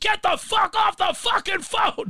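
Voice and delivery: shrill screamed outburst at a very high pitch. Retelling a phone-line clash at the office, speaker imitating someone screaming. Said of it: "He's screaming".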